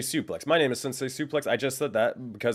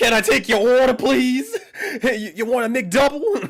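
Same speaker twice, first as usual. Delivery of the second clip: shrill, blaring, very high, loud speaker voice; 12 semitones higher, 9 dB louder than usual. Streamer mocking his own loud audio for chat: McDonald's drive-through voice. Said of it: "Sounds like McDonald's drive through".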